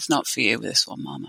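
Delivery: hushed, very quiet, quick voice. Recalling a voice heard in her right ear while watching smoke rise, very quiet voice. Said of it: "very quiet voice in my right ear say".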